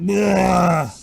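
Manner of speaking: put-on loud, high, drunken retching bleh. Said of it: "doing that drunk thing".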